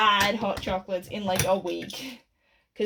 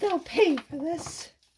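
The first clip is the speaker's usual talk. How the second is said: little, high, squeaky cartoon mouse voice; 8 semitones higher than usual. Recounting a design session, the speaker attempts a Mickey Mouse impression. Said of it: "my attempt at a Mickey Mouse impression".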